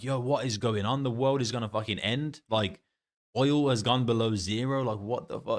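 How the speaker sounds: ordinary talk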